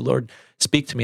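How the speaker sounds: usual speaking voice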